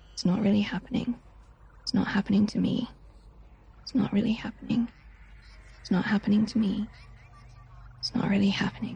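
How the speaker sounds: calming, soothing, said to oneself. Voicing a character calming herself after being locked out: murmuring very quietly. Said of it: "very, very, very quietly, you hear".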